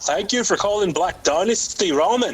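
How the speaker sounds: unsure attempt at Irish or Scottish accent. Retelling how he answers the restaurant's phone, attempted Irish or Scottish accent. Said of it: "I don't know if it's Irish or Scottish right now".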